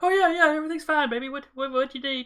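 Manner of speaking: breathless, very high-pitched, loud voice. Retelling a phone call, the speaker acts out Mom answering, imitating out-of-breath mom. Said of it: "she sounds out of breath".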